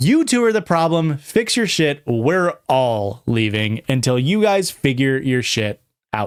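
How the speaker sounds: ordinary talk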